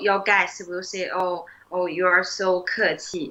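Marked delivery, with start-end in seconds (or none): none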